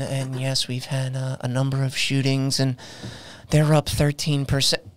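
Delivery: flat monotone. Speaker demonstrating how someone on the news reads facts, flat monotone delivery. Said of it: "that's just real monotone".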